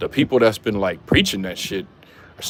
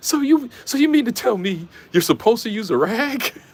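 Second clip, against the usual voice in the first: very high, near-tearful voice; 13 semitones higher than usual. Retelling a woman's TikTok about washing: imitating someone about to cry. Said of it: "She was about to cry".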